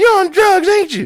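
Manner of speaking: put-on very high, screechy old woman yelling. Retelling an old lady yelling at a driver: imitating an old lady yelling. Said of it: "she's yelling at him".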